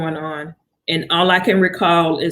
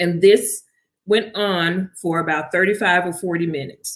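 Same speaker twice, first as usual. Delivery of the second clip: plain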